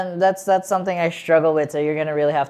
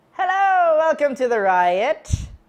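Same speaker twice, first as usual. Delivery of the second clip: very high, put-on leprechaun voice; 11 semitones higher than usual. Opening an episode of the show The Riot: leprechaun voice. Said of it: "I don't know why I turned into a leprechaun".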